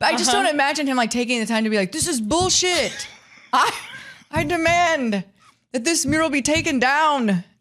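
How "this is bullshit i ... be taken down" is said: put-on Slovenian-accented speech. Acting out what a man might say, in a Slovenian accent. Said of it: "worried about talking in a Slovenian accent".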